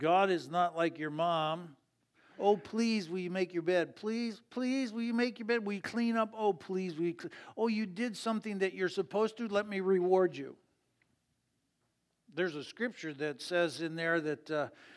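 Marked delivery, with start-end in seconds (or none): 2.4-10.6 wheedling, pleading, begging voice. Speaker contrasting God with your mom: imitating a begging mom. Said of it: "It's not like God is going to beg you either".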